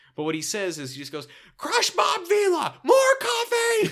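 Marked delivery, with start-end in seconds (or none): 1.6-3.9 growly yell, higher and louder. Retelling a sitcom scene, imitating Tim yelling. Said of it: "Tim yelling".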